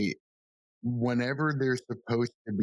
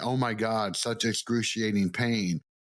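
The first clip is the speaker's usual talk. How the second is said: ordinary talk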